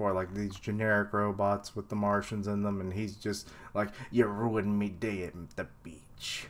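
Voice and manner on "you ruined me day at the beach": badly done cartoon sailor voice. Describing robots with Martians in them, doing a bad Popeye impression. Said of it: "I can't do a good Popeye impression".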